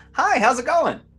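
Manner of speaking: bright, friendly, cheery, pitched way up. Voicing a character greeting goblinoid guards: cheerful greeting. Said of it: "Annie will cheerily go".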